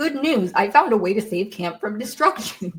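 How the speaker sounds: acted, proud, declaring announcement voice. Retelling a character's announcement while recapping an episode: imitating Percy speaking loudly. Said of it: "Percy loudly is like".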